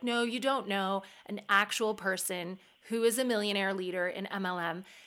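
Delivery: ordinary delivery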